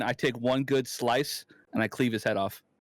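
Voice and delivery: ordinary talk, nothing marked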